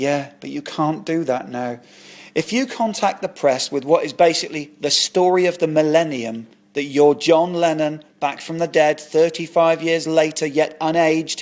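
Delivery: ordinary delivery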